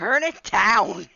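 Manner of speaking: loud screamed shouting. Retelling going upstairs about the loud music: imitating screaming. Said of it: "went upstairs screaming".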